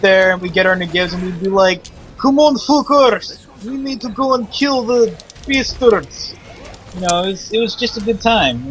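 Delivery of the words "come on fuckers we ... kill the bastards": put-on Russian accent, much higher, slower. Retelling how you pretended to be Russian men playing Counter-Strike, pretend Russian accent. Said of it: "pretended to be Russian men with very good accents".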